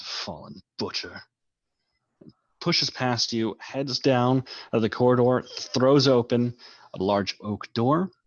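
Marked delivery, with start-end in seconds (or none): 0.0-1.2 sneering, lower and quieter. Narrator voices a man sneering at you before pushing past, sneering. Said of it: "He looks at you with a sneer".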